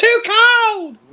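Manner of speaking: high-pitched, frightened, alarmed cry. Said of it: "She's like".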